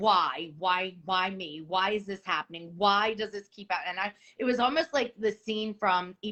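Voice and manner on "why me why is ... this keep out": acted sobbing voice. Recalling breaking down on the kitchen floor, retelling crying and asking why. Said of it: "crying and asking".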